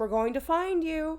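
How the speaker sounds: lilting, sing-song calling voice. Reading a story, calling out to someone hiding during a search: sing-song voice. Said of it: "I called in a sing-song voice".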